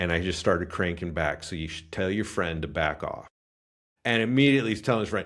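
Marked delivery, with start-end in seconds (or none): 1.4-3.3 put-on whisper, lower and quieter. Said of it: "I whispered in this guy's ear".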